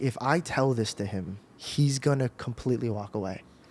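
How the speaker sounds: ordinary delivery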